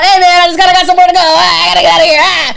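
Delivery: muttering under the breath. Retelling running downhill away from a man: mumbling while running away. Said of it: "I'm just mumbling down the hill".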